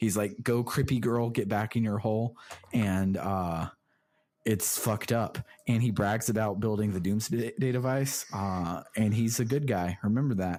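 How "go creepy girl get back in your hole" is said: ordinary talk, nothing marked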